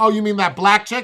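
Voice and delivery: really loud, high, deliberate remark. Speaker retelling deliberately asking a companion something loudly, retelling saying it really loud. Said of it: "I said it really loud like that".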